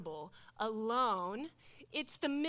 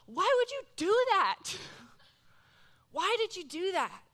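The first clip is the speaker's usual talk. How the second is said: mock upset, loud, pitched-up yelling; 9 semitones higher, 6 dB louder than usual. Retelling own past outburst while upset: retelling own yelling. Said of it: "I'm actually yelling out loud".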